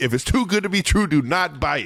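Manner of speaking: high-pitched mock yelling. Retelling how he was yelling at the DB, imitating someone yelling. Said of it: "he's like yelling at the D B".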